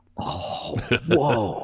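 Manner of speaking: awestruck, wonderstruck exclamation. Retelling seeing a movie scene as a kid: imitating being in awe. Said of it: "just in awe".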